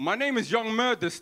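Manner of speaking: laid-on, put-on South London roadman voice. Imagining roadmen queuing for a Disneyland ride, answering the ride attendant: roadman voice. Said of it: "imagine a bunch of roadmen lining up".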